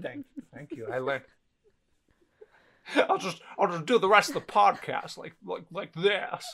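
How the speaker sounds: stumbling, tripping over the repeated words. Thanking for praise while keeping the voice: Jimmy Stewart impression. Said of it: "You're gonna talk like Jimmy the whole time".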